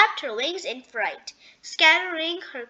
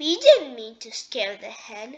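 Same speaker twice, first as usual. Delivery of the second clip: ordinary delivery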